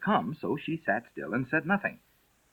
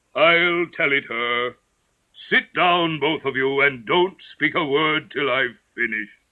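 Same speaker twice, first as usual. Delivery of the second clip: hollow, empty-sounding voice; 3 semitones higher, 4 dB louder than usual. Narrator reads the Mock Turtle speaking to Alice and the griffin: Mock Turtle voice, deep, hollow. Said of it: "spoke in a deep, hollow tone".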